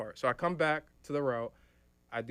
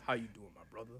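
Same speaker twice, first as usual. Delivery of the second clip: level, flat, unvarying monotone drone; 8 dB quieter than usual. Retelling how Skip always greets people: Skip's monotone voice. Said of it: "a monotone".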